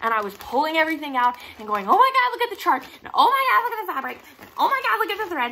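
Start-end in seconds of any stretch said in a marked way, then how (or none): 1.9-5.5 very high, rushed, thrilled, excited gushing. Retelling opening a kit from the mail beside the speaker's boyfriend: retelling an excited scream. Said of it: "I screamed".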